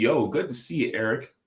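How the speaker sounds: ordinary talk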